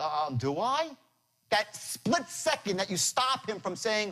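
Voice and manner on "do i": confused, caught off guard, halting uh-um reply. Imitating a prospect hearing the line: imitating a confused prospect. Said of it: "he's like".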